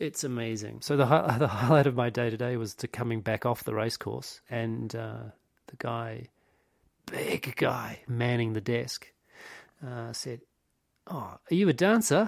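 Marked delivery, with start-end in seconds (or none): 11.1-12.3 failed put-on New Zealand accent, pitched up. Retelling what the big guy manning the desk said, in a bad New Zealand accent. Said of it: "I can't do this New Zealand accent".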